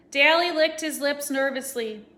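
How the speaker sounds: ordinary delivery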